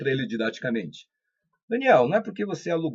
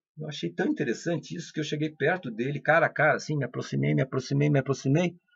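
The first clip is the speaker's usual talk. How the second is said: ordinary talk, nothing marked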